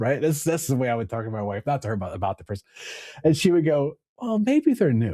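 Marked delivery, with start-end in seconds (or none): 4.2-5.1 acted earnest, sincere, slightly high voice. Speaker quoting his wife's answer about a teammate: imitating wife's sincere reply. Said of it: "And then and I get ticked off".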